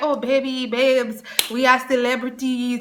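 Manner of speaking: put-on mimicked Caribbean island accent. Retelling what a friend said to the speaker: imitating a caribbean accent. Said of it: "with his accent".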